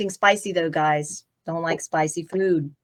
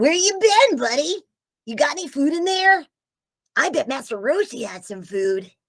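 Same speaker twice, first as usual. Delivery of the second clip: very high, swooping, bouncing cartoon boy voice; 9 semitones higher than usual. Asked to do the voice again for someone who just arrived: Kid Goku voice. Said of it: "didn't get to hear your Kid Goku voice".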